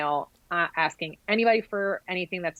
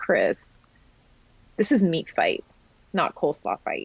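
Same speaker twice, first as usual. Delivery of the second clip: mock-calm, put-on calm tone. Retelling a kitchen argument, the speaker quotes their dad answering chris: retelling a calm reply. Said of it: "looked at him really calmly".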